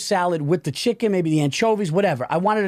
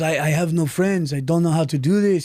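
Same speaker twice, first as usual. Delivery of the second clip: put-on speaking with Serbian accent. Retelling what a man he was helping said, in an accidental Serbian-sounding accent. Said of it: "I turned him into a fucking Serbian".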